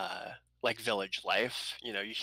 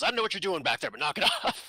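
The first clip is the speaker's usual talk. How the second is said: play-acted rapid, loud, scolding yell; 8 semitones higher, 6 dB louder than usual. Voicing a character calling to someone back there: yelling back. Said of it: "Azel yells back".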